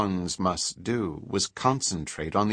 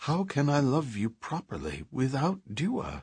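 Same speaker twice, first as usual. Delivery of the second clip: tender caressing voice, swooping and pitched-up; 6 semitones higher, 3 dB quieter than usual. A speaker addresses his companion, caressing voice. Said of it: "Trit's voice was caressing".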